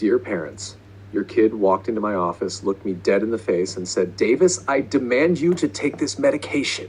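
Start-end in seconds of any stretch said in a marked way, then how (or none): 4.2-6.9 high, deranged mad doctor voice. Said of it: "like there's some deranged doctor from hell".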